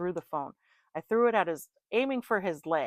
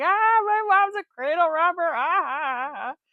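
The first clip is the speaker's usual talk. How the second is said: very loud, high, teasing, mocking taunt; 12 semitones higher, 9 dB louder than usual. Retelling a son teasing from the back seat: imitating someone making fun. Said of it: "He's making fun of me".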